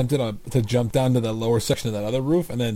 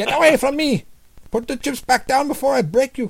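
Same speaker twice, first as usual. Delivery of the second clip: very high, frightened, scared voice; 14 semitones higher, 4 dB louder than usual. Showing what comes out when you try to do a voice, put-on scared 7-eleven owner voice. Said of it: "like a kind of scared 7-Eleven owner in 2004".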